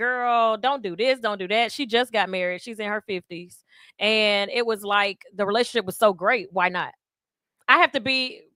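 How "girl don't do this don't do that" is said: ordinary talk, nothing marked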